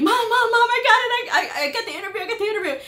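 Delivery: put-on, very high-pitched, thrilled, overjoyed screaming. Retelling phoning their mom from the hospital parking lot about an interview, retelling excited screaming. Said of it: "screaming like I had won the lottery".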